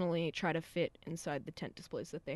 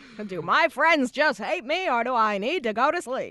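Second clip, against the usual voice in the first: bad, poorly done carnival-barker voice; 4 semitones higher, 4 dB louder than usual. Right after saying they love John Mulaney, speaker quotes him, bad John Mulaney impression. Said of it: "he sounds like a carnival barker thing".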